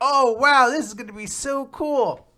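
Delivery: put-on very high, drawn-out, delighted excited little kid voice. Retelling a scene where a child gets a lollipop: imitating an excited child. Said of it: "she runs away all excited".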